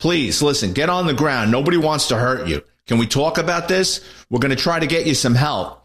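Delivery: ordinary talk, nothing marked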